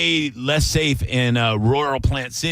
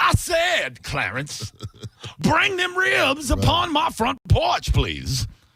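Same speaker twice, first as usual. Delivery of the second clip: put-on, very high, swooping voice. Acting out a slave owner demanding the ribs: acting as a slave owner. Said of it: "he was doing a character".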